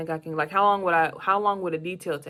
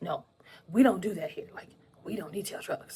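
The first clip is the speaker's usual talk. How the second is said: mock gleeful, eager tone, quieter; 5 dB quieter than usual. Retelling how a man refused to detail his truck, imitating gleeful refusal. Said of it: "he's excited to like tell me no".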